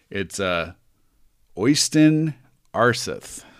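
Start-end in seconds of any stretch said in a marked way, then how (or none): 1.5-3.4 the name pronounced with an American accent. Saying a guy's name the way an american would: american accent on the name. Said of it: "I'm going to say it in the way an American would say it".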